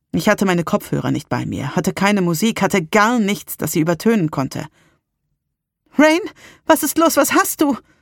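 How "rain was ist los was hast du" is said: frantic, alarmed, panicked, very high voice. Asking someone in sudden pain what is wrong, panicked. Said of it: "Salems Stimme klang panisch".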